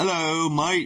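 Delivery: very high, put-on fake British accent. Reading someone's post aloud after being told to say it in a put-on British accent. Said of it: "You gotta say it in British".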